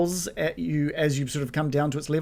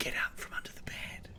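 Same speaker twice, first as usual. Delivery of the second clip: very quiet, barely voiced whisper. Retelling a woman's words in a story; whispering. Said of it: "and she whispers like".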